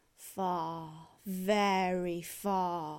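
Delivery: low, slow drawling wasp voice, stretched far. Narrator reading a story; the wasp answers her as she falls, drawling. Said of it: "drawled the wasp".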